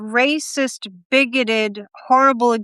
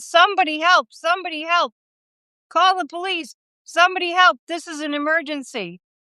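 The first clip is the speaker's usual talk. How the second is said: frantic, desperate screaming and yelling out; 6 semitones higher than usual. Acting out a cry for help in an emergency: screaming for help. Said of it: "you're screaming and screaming and screaming".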